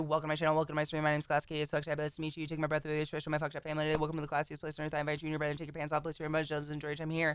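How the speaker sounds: rapid-fire spiel. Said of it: "I talk very quickly".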